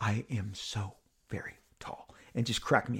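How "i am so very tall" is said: hushed, very drawn-out, slow, breathy whisper. Retelling what Ryan whispered in the speaker's ear: imitating a whisper. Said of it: "whispered in my ear".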